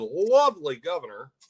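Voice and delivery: sarcastic tone. Talking about the governor in conversation, sarcastic. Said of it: "and I say this sarcastically".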